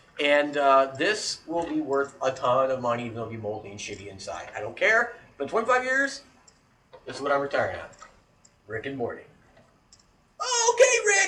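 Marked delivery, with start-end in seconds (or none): 10.7-11.3 very high, loud, pitched-up cartoon voice. Showing off cereal, doing Morty's voice: imitating Morty's voice. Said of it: "you would not understand what that voice was".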